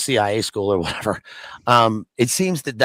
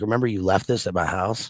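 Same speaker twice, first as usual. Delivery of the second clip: put-on muttered aside; 3 dB quieter than usual. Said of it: "under his breath".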